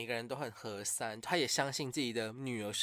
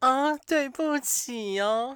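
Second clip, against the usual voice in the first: mock apologetic tone, higher and louder; 13 semitones higher, 12 dB louder than usual. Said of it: "他的口气是".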